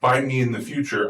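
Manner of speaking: usual speaking voice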